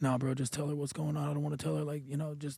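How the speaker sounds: very quiet, barely audible, hushed half-whisper. Retelling what the friend sitting next to them said, imitating a friend half-whispering. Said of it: "but he's whispering".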